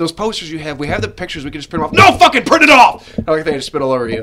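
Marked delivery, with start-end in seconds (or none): 2.1-3.1 very loud, very high, shrill, furious yell. Retelling your angry reply about printing the posters: retelling an angry outburst. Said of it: "I was so pissed".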